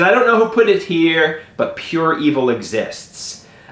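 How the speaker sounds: plain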